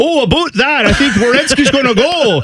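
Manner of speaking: put-on Canadian radio pundit accent. Telling the other person about a radio show, imitating a guy with a Canadian accent. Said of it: "some guy with a Canadian accent be like".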